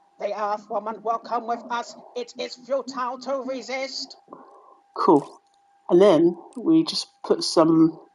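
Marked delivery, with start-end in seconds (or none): 0.2-4.2 weird put-on voice, high, hushed, very soft. Trying to replicate a sound by doing a voice, weird put-on voice. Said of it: "I'm sorry if I sound weird".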